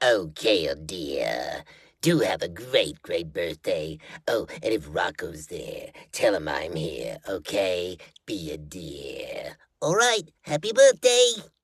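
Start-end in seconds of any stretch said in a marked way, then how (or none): 0.0-9.6 very low, slow cartoon voice, "dear" drawn out. Recording a birthday greeting, channeling Charlie Adler's Bev Bighead voice. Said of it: "channel my best Charlie Adler as Bev Bighead".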